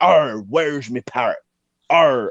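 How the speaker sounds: drawn-out pirate voice, heavy on "arr". Acting out going down the high street: pirate voice. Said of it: "you need to sound a bit more piratey".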